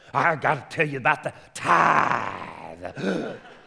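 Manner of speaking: put-on rough, creaky old-time pulpit preacher voice. Teaching about the tithe, saying it like an old-time preacher he used to hear. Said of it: "I want to say it like an old time preacher".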